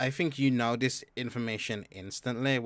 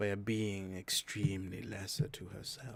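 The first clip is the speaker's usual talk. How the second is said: put-on fey noble voice, quieter; 3 semitones lower, 7 dB quieter than usual. Voicing Ellison addressing the lords and ladies: Ellison voice. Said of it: "And he just says".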